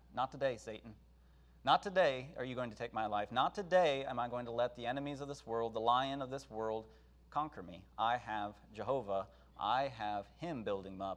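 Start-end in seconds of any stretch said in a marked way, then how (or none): none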